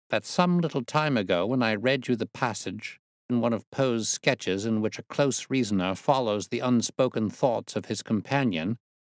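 ordinary delivery, nothing marked

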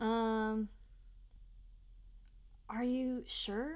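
small uncertain voice. Coaching an actor on a line, demonstrating a small, uncertain voice. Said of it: "make your voice small and uncertain".

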